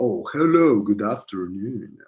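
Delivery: switched-on, polished professional business voice. Speaker shows how they would reply to someone, using their professional voice. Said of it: "with my professional voice".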